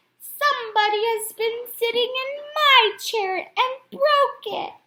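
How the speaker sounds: very high, small squeaky voice. Narrating the three bears story, giving Little Bear's line in a small squeaky baby voice. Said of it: "small, squeaky baby voice".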